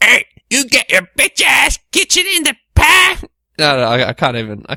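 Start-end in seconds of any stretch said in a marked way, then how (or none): 0.0-3.2 very high cartoonish voice. Trying an impression when asked what he was proud of: Cartman impression. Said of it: "South Park, Cartman".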